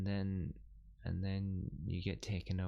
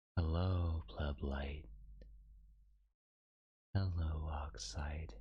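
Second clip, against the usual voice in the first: hushed, soft asmr-style yandere voice; 3 semitones lower than usual. Greeting listeners in an ASMR-like yandere voice. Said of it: "My yandere voice is kind of A S M R too".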